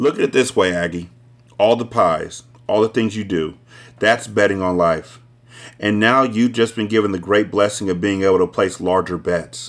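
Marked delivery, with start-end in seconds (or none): none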